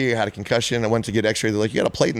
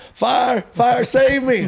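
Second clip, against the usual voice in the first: mock very high, very slow, drawn-out panicked yell; 5 dB louder than usual. Retelling being trapped in a flipped truck, imitating own yelling for help. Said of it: "I'm yelling".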